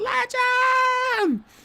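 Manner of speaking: very high-pitched, loud scream. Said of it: "I literally screamed".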